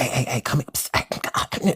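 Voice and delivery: slow, snake-like hissing whisper. Retelling a man who came outside whispering: snake-like hissing whisper. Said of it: "whispering like a weird snake or something".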